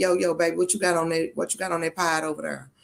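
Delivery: laid-back, street-cool, hip grandma voice. Speaker describing what kind of grandma she is, doing a hip grandma voice. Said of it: "I'm that grandmama like".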